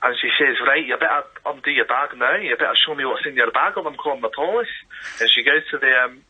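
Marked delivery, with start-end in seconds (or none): 0.7-4.7 put-on Scottish-accented, demanding voice. Retelling a woman calling them back into the shop, in a scottish accent. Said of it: "Scottish bit of it".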